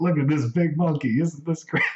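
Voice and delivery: put-on American Southern accent. Retelling what a man said while watching a movie on tv, imitating a southern accent. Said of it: "he's says in like his southern accent".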